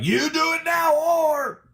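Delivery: very high, slow, stern fatherly voice. Retelling how a dad would scold at home: imitating a stern dad. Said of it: "dad would be stern".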